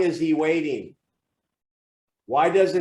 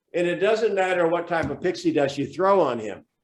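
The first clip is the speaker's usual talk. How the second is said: ordinary talk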